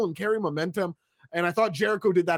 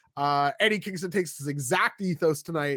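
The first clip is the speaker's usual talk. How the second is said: usual speaking voice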